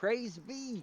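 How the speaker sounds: very loud, very high shout. Playing a character who leans out of the ambulance window: yelling out a window. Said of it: "I stick my head out and I yell".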